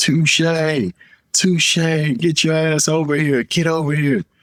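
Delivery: very high, screaming call. Retelling a coach pulling up beside him: imitating someone screaming. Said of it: "he's screaming my name".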